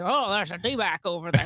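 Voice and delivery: put-on cowboy voice. Imitating a cowboy spotting a snake: cowboy accent. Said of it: "Is that your cowboy accent?".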